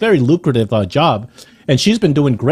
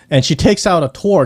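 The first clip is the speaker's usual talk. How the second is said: ordinary talk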